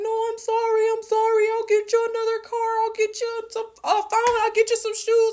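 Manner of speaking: put-on very high, crying, tearful pleading voice. Speaker retells a man's apology after he threw her keys, imitating someone crying. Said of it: "and he's crying".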